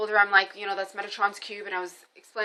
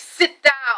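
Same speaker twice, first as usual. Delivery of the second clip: mock bossy, commanding tone; 5 semitones higher, 6 dB louder than usual. Retelling how a woman told the speaker to sit, imitating a bossy order. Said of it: "She's like bossing me around".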